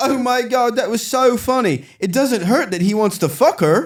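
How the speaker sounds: very high-pitched, put-on British accent. Retelling what the publicist said in the car: put-on british accent. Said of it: "It sounds worse in a British accent".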